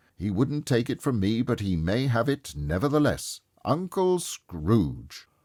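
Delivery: hearty, jolly, good-humoured tone. Narrator reads Fred toasting his absent Uncle Scrooge, jolly and good-humoured. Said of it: "It was a much greater surprise to [name] to recognize it as his own nephew's, / laughed [name]'s nephew. / When [name]'s nephew laughed in this way, holding his sides, rolling his head, and twisting h".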